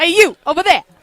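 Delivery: put-on New York accent. Showing the East Coast version of "you guys": put-on New York accent. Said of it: "Was that a New York accent?".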